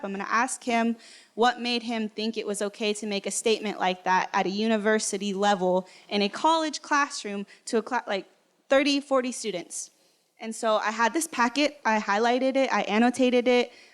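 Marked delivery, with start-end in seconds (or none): none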